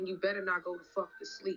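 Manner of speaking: mock menacing, evil-sounding tone. Retelling a captor's words from inside a trunk: imitating a menacing threat. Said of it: "with this evil look on her face".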